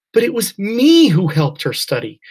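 loud, indignant, outraged voice with swooping pitch. Reading a girl's protest at being made an alternate, outraged. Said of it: "outrage in her voice".

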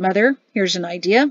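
ordinary delivery

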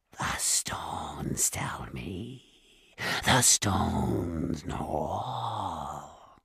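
very slow, tiny, whispery creature voice. Narrator reading a cave creature's answer to Jared, small, whispery creature voice. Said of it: "A nodder or a banger, ... It had a small, whispery voice".

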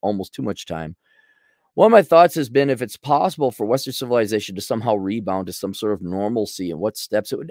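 ordinary talk

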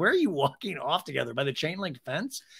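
ordinary talk, nothing marked

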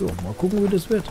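high playful singsong.

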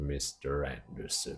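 put-on very low, deep, measured old-radio announcer voice. Quoting Hugo Weaving's line as the character, in a Smith voice. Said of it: "like with his voice, which sounded like".

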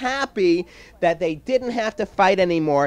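ordinary delivery

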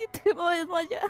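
slow, drawn-out, fading voice as if about to faint.

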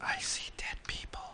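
soft, high spooky whisper. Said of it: "you spoiled the movie".

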